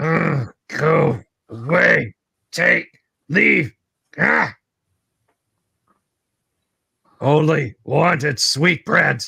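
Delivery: creaky, rough growl of a ghoulish beast. Narrating the scene to the players, voice the ghast growling at them: growling ghast voice. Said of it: "the ghast growls at you".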